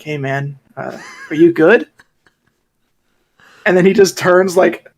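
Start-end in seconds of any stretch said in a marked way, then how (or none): 0.0-1.9 mock whispering. Retelling catching a guy on the train: imitating own whisper. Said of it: "I kinda whisper, I'm like".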